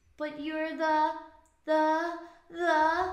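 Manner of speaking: high, very slow, drawn-out storybook voice. Acting out a scene with the Grinch for the others: Cindy Lou Who voice. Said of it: "This is our best impression".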